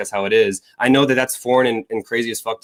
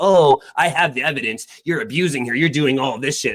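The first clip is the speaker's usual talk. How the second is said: scornful, derisive parroting tone; 3 semitones higher than usual. Mimicking the other speaker's accusations during an argument: mocking imitation. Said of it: "just saying".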